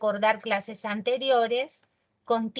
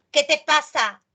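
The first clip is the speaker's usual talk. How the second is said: loud, aggressive, pushy, confrontational tone; 4 semitones higher, 6 dB louder than usual. Demonstrating an exclamative question as a reproach: confrontational, aggressive tone. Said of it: "Así todo achorada".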